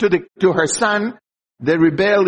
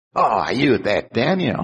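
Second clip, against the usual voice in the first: cutting, smart-aleck sarcastic tone; 9 semitones lower, 3 dB quieter than usual. Acting out the king's question to daniel: imitating smart-aleck sarcasm. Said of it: "And this is the way he's using it".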